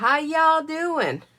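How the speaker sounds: put-on southern accent. Greeting viewers in a live chat, put-on southern accent. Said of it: "I feel like I have this southern accent".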